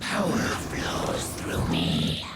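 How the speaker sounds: very deep, low, guttural dragon growl. A game character's voice line, played for listeners to react to: guttural dragon voice. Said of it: "almost hear like a guttural dragon voice underneath".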